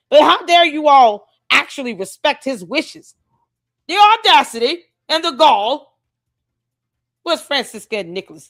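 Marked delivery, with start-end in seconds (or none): 3.8-5.9 fake British accent, put on for effect. Speaker sarcastically voicing outrage for listeners, in a put-on British accent. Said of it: "Tell me if my British accent is getting better".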